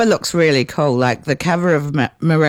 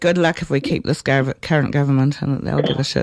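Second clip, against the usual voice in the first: muttered, mumbled under the breath. Making an aside about the current government: muttering under breath. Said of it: "I'll just mutter under my breath".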